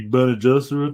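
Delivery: slow, loud, drawn-out drawl. Imitating an actor slipping into his old voice: Austin Butler impression. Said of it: "That's a great Austin Butler impression".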